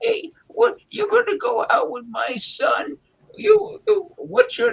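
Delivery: put-on very high, crotchety old-lady voice. Doing a character the way an old lady would, talking to someone dating her son, old lady voice. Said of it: "Like an old lady would".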